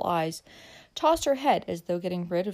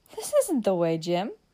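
half-laughing, laughing. A woman answers Jim as they turn down a side street, in laughing protest. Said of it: "she said in a tone of laughing protest".

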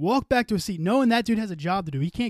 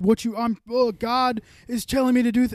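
mock crying, higher pitch; 5 semitones higher, 3 dB louder than usual. Speaker mocks a man who cried after slapping someone, imitating someone crying. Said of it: "and then to cry and be like".

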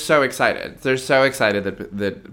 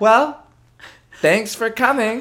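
put-on robotic saloon girl voice, higher and louder; 13 semitones higher, 5 dB louder than usual. Saying goodbye to a guest after a chat: animatronic saloon girl voice. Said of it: "an animatronic saloon girl".

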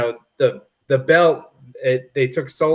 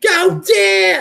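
put-on New York yell, much higher pitch; 4 dB louder than usual. A speaker imitates their mom cheering for Dan, mock New York yell. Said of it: "She has like a very New York".

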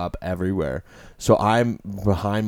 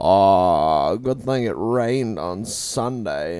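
slow, tipsy put-on drunk drawl.

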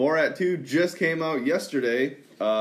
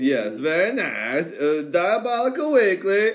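put-on Eastern European accent, pitched up; 5 semitones higher, 4 dB louder than usual. Urging Josh to say it with the accent, then saying it in a put-on accent. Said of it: "You gotta say it with the accent".

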